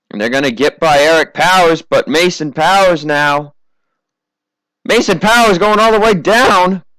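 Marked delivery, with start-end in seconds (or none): 4.9-6.8 announcer voice cracking, breaking up high. Announcer calling a race as a driver goes all the way down, voice cracking. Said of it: "Voice crack".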